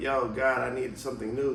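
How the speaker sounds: plain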